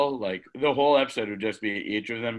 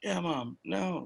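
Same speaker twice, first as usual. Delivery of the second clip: anxious, high, hushed half-whisper; 8 semitones higher, 7 dB quieter than usual. Acting out someone answering their mom's call in public: imitating someone half-whispering.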